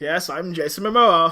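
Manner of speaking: slow, drawn-out drawl, each word dragged. Retelling a sighting in an old-timey car: imitating Jason Momoa. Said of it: "in this car going like".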